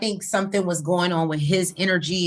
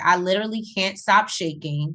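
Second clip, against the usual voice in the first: ordinary talk, nothing marked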